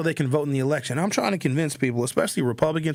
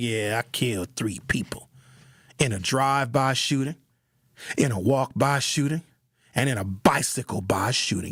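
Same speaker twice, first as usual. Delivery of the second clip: put-on tough voice, lower pitch; 4 semitones lower than usual. Imagining a murderer cellmate describing his crimes: imitating a tough cellmate. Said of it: "Your cellie be like".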